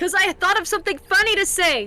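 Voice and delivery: loud shout.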